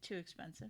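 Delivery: soft, unbothered, utterly calm. Retelling a parent's reaction to a joke: imitating a calm reply. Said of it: "my dad very calmly said".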